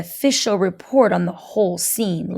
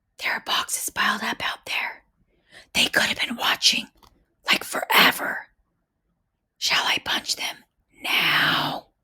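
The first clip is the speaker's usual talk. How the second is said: hushed, soft whisper, nearly all breath; 5 dB quieter than usual. Reading a story where a girl takes her friend aside: whispering. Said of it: "April whispered".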